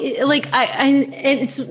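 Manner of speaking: very slow, halting stutter with stammering false starts. Answering another speaker about reactions from people, stuttering. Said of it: "I'm stuttering here".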